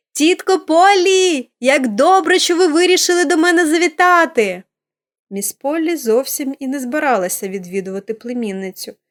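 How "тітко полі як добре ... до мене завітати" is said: high, joyful, delighted drawn-out cry. Pollyanna spots her aunt on the landing, exclaiming with delight. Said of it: "з захватом вигукнула".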